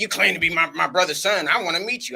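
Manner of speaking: put-on disbelieving tone. Retelling his aunt calling him up to meet him, imitating Aunt Tot's disbelief. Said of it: "the disbelief in her voice".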